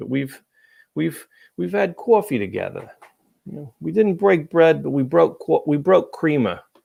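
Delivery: sudden Boston accent. Talking to Pete about having had coffee together, slipping into a sudden Boston accent. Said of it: "I went into a Boston accent all of a sudden".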